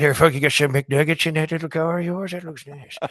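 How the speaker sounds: gummy, toothless speech, pitched high. Retelling asking for an autograph at a drive-thru: toothless Stone Cold voice. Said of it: "Did Toothless Stone Cold run up on Terry Funk?".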